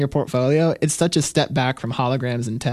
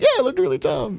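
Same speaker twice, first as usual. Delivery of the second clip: mock sobbing, pitched way up; 12 semitones higher than usual. Retelling agreeing with a client's criticism of the work, imitating crying while agreeing. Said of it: "And I'm crying".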